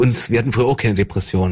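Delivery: ordinary talk, nothing marked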